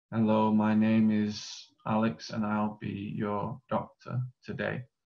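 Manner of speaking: soft, slow, reserved, withdrawn introverted delivery. Explaining a role play, the speaker demonstrates an introverted delivery. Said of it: "you might speak like this".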